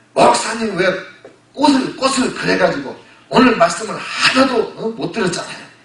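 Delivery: high, loud, argumentative, complaining tone.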